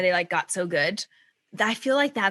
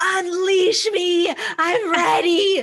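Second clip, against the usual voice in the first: put-on scream, higher and louder; 11 semitones higher, 6 dB louder than usual. Retelling the moment after finishing a recorded set: imitating own screaming.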